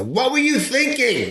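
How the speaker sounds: high, wide yell in an Italian style.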